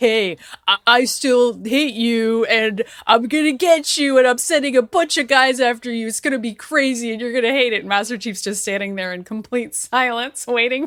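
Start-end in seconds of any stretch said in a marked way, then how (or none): 0.0-7.8 mock taunting alien villain voice, higher, louder, slower. Joking that aliens keep phoning Master Chief, the speaker does a mock alien villain taunt. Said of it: "aliens are constantly calling Master Chief".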